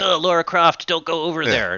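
put-on dweeby American accent. Retelling how an actor delivers a movie line, in a dweeby american accent. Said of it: "dweeby American accent".

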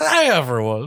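loud, high-pitched delivery. Showing another speaker how he almost sounded: Harry Caray voice. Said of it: "Will Ferrell's Harry Carey".

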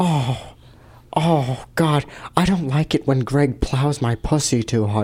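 low, slow, hushed, soft, drawn-out drawl. Doing an impression after it is requested: Jennifer Coolidge impression. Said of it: "That's Jennifer Coolidge".

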